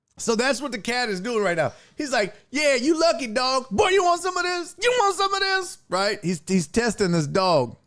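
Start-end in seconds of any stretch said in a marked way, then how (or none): 2.5-5.8 put-on tough-guy voice, much higher pitch. Voicing a cat taunting a dog behind a fence, mock tough-guy talk. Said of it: "typical tough guy behavior".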